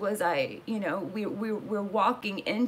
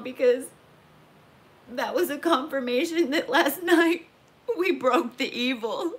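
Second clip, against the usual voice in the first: crying through words, tearful, halting, voice breaking up; 5 semitones higher, 6 dB louder than usual. Describing a spiritual experience with two archangels, crying. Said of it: "I'm crying right now".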